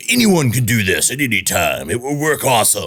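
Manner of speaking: polished on-air radio announcer voice. Talking with Chris, the speaker shows off a radio voice. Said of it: "There's my radio voice for you".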